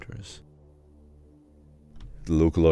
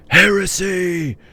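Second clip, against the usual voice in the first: much higher, loud, slow crowd-style yell. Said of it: "People standing around begin yelling".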